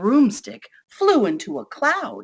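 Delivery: ordinary delivery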